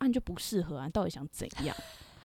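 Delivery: feigned cold tone. Imagining being the hairdresser speaking to a client, mock-cold remark. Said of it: "我就冷冷的说一句".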